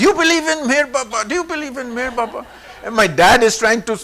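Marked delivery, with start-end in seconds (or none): 0.0-2.5 shouting, pitched up. Retelling how a woman shouted at Adi from the stairs, imitating her shouting. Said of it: "she's shouting at him".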